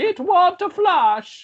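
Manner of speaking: high, exaggerated Italian accent.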